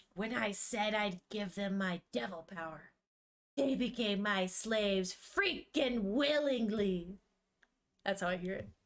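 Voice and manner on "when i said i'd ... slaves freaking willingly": witchy, fairy-tale witch voice. Showing how the speaker hears a character's voice, in a witch-like voice. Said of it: "like a witch".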